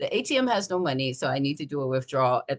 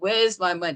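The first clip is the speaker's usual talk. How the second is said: mock growled, screaming outburst; 4 semitones higher than usual. Retelling a demand at a bank that had no money: imitating own growling scream. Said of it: "I'm growling and I'm screaming".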